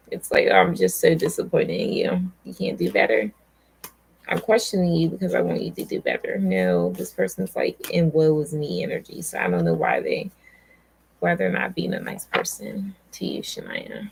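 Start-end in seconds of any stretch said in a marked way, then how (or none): none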